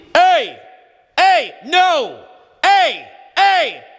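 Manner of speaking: very high, unstrained, drawn-out open yell. Showing the right way to yell loudly: loud yell without strain. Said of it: "now you can't hear how loud that is".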